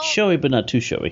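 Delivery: ordinary delivery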